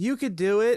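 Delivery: put-on very high cheering shout. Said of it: "someone in the audience yelled".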